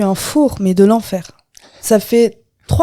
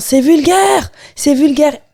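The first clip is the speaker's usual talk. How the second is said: mock offended, indignant cry of disapproval; 5 semitones higher than usual. Recounting a woman who left the room during her appearance, retelling a woman's shout. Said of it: "elle part en criant".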